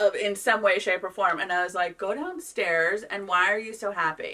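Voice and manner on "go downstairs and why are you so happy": plain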